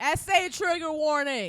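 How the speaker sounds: loud, very slow, drawn-out giddy yell. Reacting to a trigger warning before a serious article: yelling giddily. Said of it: "You giddy about it".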